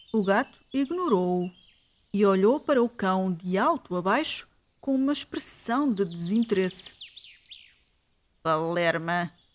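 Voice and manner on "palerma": muttered through gritted, clenched teeth, lower pitch. A narrator voicing a cat speaking to a dog, through gritted teeth. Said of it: "disse-lhe o gato entre dentes".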